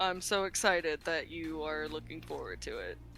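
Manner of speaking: unexcited delivery, pitch swinging about, oddly tense. Replying to someone who is baking a biscuit, flat, unexcited. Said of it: "you sound more excited. You don't sound like you're".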